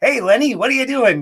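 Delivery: high-pitched, cheesy put-on mobster voice. Recalling a dinner-theater audition, doing a Joe Pesci-style cheesy mobster voice. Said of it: "cheesy mobster character".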